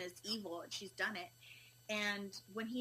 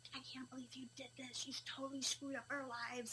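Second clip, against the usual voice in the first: mock half-shouted, mildly accusing scolding yell; 4 semitones higher, 6 dB quieter than usual. Retelling what an angry partner screamed at her: imitating someone screaming. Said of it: "him just screaming at me".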